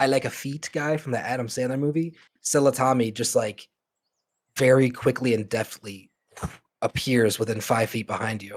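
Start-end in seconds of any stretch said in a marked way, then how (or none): none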